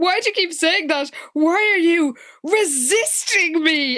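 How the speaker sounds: put-on petulant, high, whiny tantrum voice. Retelling a scene from a book, imitating a tantrum. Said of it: "she literally has a tantrum and was like".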